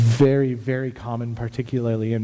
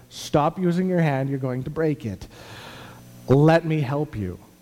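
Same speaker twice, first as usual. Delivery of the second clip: play-acted bossy, fretting scolding, yelling; 4 semitones higher than usual. Speaker retells Sherry yelling while they tried doing things themselves; imitating Sherry yelling. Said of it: "yelling at me".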